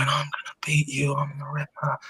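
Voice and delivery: whispered, very quiet, barely audible. Retelling what someone whispered from under a towel on camera, retelling a whisper. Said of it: "And he's just whispering".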